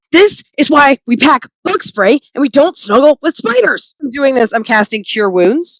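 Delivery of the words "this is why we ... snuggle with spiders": high-pitched, in-character shouting yell. Waking an unconscious party member covered in spiders: yelling in character. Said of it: "I'm gonna yell".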